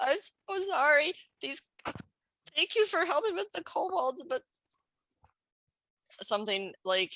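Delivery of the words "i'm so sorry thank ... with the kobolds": very high, tearful, sobbing voice. Game master voicing a slumped townsman thanking the party for helping with kobolds, crying. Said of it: "And he's like crying".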